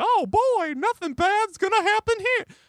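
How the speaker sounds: botched, very high cartoon-mouse voice. Describing a man walking into a hedge fund offer, doing a Mickey Mouse voice. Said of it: "That's Mickey Mouse".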